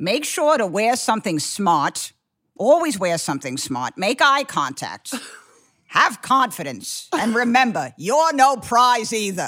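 put-on grandmother voice. Speaker performs what their grandma told them about dating, imitating grandma. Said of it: "I could do my grandma giving you dating advice".

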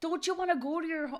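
put-on Wisconsin accent. Quoting a famous movie line about telling the ball to go home: Happy Gilmore quote in Wisconsin accent. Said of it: "I don't know why he got a Wisconsin accent".

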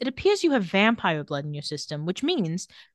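ordinary talk

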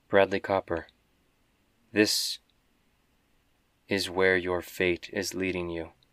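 even, expressionless, flat, neutral monotone. A voice speaks to the soaring traveler, in a neutral monotone voice. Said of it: "quite neutral, quite monotone".

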